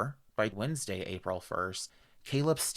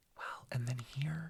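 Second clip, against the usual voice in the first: hushed whisper, much quieter; 3 semitones higher, 8 dB quieter than usual. Discussing the dates in a case with a listener: whispering. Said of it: "Why are you whispering".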